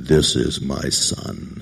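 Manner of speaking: very deep, slow, drawn-out masculine voice. Imagining a voice from heaven at a baptism, deep masculine God voice. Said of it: "we always think God has this deep masculine".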